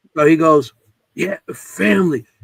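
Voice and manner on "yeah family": rough, raspy voice. Retelling what a voice answered the group: Sal's raspy voice. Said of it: "'cause he had a raspy voice".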